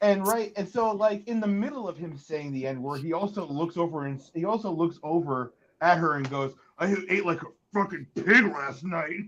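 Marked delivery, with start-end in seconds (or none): 6.8-9.2 dazed, offhand wrestler voice. Retelling what he said on a video to her: Hulk Hogan impression. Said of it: "It's a really good impression".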